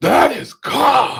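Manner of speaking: very high, very loud, rough, guttural outcry. Recalling the moment a ball was lost, retelling the listener's guttural cry. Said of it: "this guttural from your depths of your soul".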